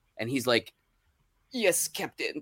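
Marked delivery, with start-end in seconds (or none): 1.5-2.4 put-on soft, frail, very old man voice, aged delivery. Retelling a Star Trek episode finale, answering Kirk: imitating super old Walter Koenig. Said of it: "being super old".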